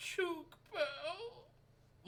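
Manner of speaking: whispered, very high, sadly weeping voice. Retelling how a weeping teammate kept saying a word: imitating a sad whisper. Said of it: "very sadly whispering".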